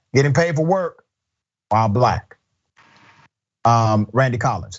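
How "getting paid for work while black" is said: ordinary talk, nothing marked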